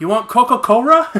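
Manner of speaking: put-on very loud, thick Japanese accent, l pronounced as r. Retelling what a waitress at a Japanese restaurant said: imitating waitress's thick Japanese accent. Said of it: "really super thick accent".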